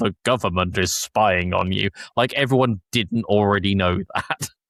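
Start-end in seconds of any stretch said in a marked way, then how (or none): 0.0-1.9 put-on funny, goofy, little modulated voice. Speaker recapping a plot, imitating the hacker streamer, Disruptor's funny modulated voice. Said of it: "puts on a funny little modulated voice and goes".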